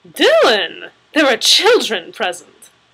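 gasping out the words. [name] reacts to the Hulk's remark about kissing, gasped. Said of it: "[name] gasped".

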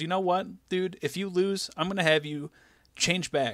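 heated, angry voice. Retelling a wrestling storyline, quoting a rival: imitating an angry wrestler. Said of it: "the guy keeps getting angry".

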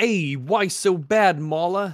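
loud, thick, heavy put-on Brooklyn accent. Speaker asks a question again in a heavy brooklyn accent. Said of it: "in your most heaviest Brooklyn accent".

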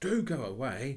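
high, very loud, nervous, urgent. Narrator reads a character answering a policeman at night, nervously. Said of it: "said Robert nervously".

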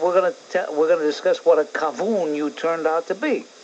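ordinary talk, nothing marked

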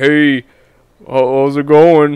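slow, loud, faked disguised voice. Retelling first greeting in voice chat: imitating a faked lower voice. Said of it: "You actually faked, like, a lower voice".

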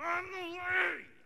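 very high-pitched, frustrated, exasperated outburst. Retelling a Bible verse, imitating Jesus mock-exasperated. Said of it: "with his hands around Thomas's neck".

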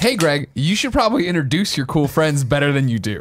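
normal talking voice

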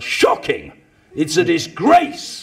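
play-acted rowdy yell, loud and swooping in pitch. Speaker mimics a Labour member who yelled at the government benches, imitating a man yelling. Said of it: "He would yell".

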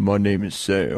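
very low, fast, put-on fake bass voice. Answering a request to hear a deep voice: put-on deep voice. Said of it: "let me hear your deep voice".

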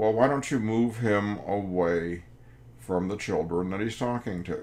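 normal talking voice

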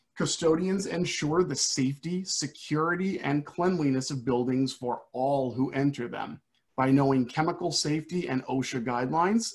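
ordinary delivery

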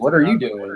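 play-acted, defensive tone. Retelling being questioned on a beach while filming: imitating a defensive retort. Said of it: "I got so defensive".

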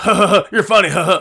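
talking through dim, dumb ha-ha laughter. Describing how everybody at the shows reacts to him, Beavis and Butthead laugh. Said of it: "like Beavis and Butthead".

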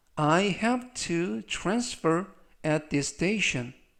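very slow, careful model reading in English. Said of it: "천천히 세 번씩 읽어드리고요".

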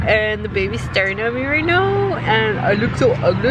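normal talking voice

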